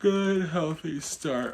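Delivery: words pushed out mid-yawn. Late at night, the speaker repeats a remark while yawning. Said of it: "I'm so sorry I'm yawning".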